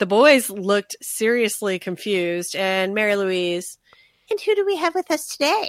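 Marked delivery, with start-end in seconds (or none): 4.3-5.7 very high, quick, snide, knowing, insinuating delivery. Retelling how a woman asked about visitors, imitating Mary Louise. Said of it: "the way she says it is like".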